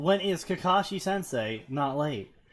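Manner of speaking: ordinary delivery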